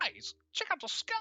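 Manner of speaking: very high-pitched bird-creature voice. After apologizing for it, the speaker goes back into the bird-person voice. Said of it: "I always wanted to do that voice".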